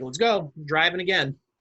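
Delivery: plain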